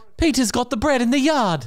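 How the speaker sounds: put-on English accent. Asked to give an English accent, the speaker tries one out. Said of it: "Give us an English accent".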